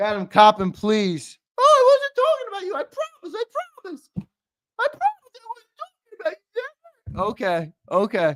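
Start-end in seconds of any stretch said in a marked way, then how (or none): 1.6-7.2 very high, tearful, mocking put-on voice. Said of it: "that was my best impersonation".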